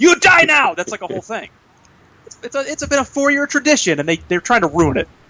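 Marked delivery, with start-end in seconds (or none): 0.0-0.7 put-on French voice, pitched higher. Showing the voice used when running a friend off the road: Sacha Baron Cohen Talladega Nights voice. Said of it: "I do the Sacha Baron Cohen Talladega Nights voice".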